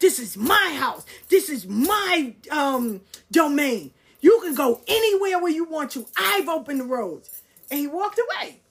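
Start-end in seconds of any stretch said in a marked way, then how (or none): 0.0-7.3 acted-out hollering, slow and drawn-out screaming. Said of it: "he just started screaming".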